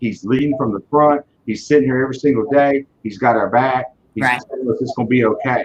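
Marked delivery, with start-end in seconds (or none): none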